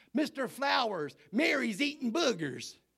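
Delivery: put-on shrill, very high, very loud little-kid holler. Retelling a pupil calling out in class: imitating a little voice hollering. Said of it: "a little voice hollered out".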